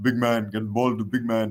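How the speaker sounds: clumsy, badly done, put-on deep big-man voice. Mocking a basketball player's voice for teaching the game: bad Shaq impression. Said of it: "that's my bad Shaq impression".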